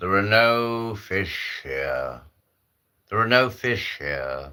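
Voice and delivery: grand, big, imposing voice. Telling a joke about an ice fisherman hearing a voice, in a big booming voice. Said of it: "this big booming voice".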